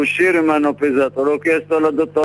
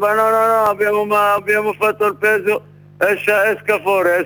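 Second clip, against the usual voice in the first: mock rude shouting, higher pitch; 6 semitones higher than usual. Retelling how a woman refused to check their blood pressure, retelling a rude shout.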